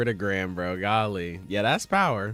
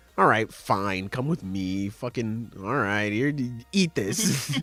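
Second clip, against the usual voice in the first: mock annoyed, fed-up, grudging monster voice. Retelling a comic scene where an angry creature gets up: imitating an angry creature. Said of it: "It gets up all pissed and mad".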